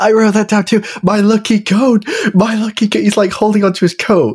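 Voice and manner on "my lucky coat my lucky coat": acted yelled lament, repeated. Recounting a movie scene to a co-speaker, imitating a man yelling. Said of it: "a guy yelling about his coat".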